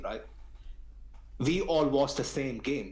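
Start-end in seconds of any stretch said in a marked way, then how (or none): 1.4-2.9 ALL stressed with a falling end. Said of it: "'Cause we all watch the same game".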